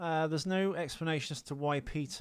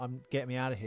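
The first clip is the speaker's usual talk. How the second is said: ordinary talk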